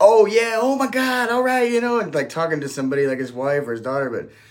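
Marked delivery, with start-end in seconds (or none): 0.0-2.0 put-on very high, overly loud Brooklyn New York accent. Imitating a man on his phone in a terminal, loud brooklyn accent. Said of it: "like in a Brooklyn, New York accent".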